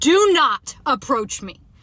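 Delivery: slow, loud, yelled delivery. Retelling a stranger approaching in a parking lot: imitating her own yell. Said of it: "I literally yelled at him and I said".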